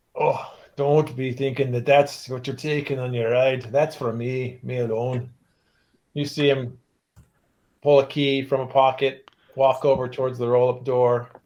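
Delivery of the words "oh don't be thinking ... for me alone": put-on strong, thick Cornish accent. In a role-play scene, a character answers a request for a ride, heavy Cornish accent. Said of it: "speaks in a heavy Cornish accent".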